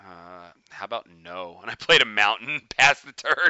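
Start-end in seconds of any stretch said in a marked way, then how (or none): 0.0-1.6 very quiet mutter under the breath. Retelling a card game, the speaker answers an opponent's request under the breath. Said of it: "under my breath go".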